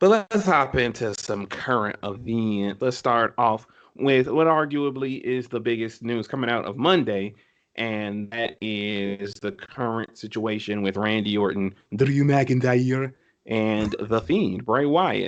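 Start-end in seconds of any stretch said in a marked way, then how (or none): 11.9-13.1 horrible, badly done Scottish accent. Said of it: "Sorry for my horrible, my horrible Scottish accent".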